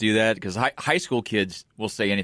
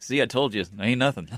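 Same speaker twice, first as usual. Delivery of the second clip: smug put-on Southern US accent; 3 semitones lower, 7 dB quieter than usual. Retelling what a man said on camera after beating a defender, put-on Southern accent. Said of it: "We're all talking in Southern accents".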